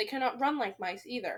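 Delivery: plain reading voice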